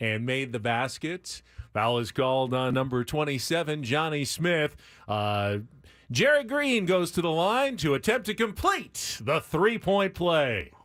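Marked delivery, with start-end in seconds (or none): 1.7-10.6 arena public-address announcer voice. Showing a past PA announcer bit for a foul call: PA announcer voice. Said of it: "I can really lean into the P A voice".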